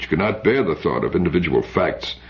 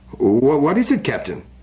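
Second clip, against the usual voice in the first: uncertain, hesitant, high and slow; 8 semitones higher than usual. Narrator voicing a man asking the captain a question, uncertain. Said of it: "He said uncertainly".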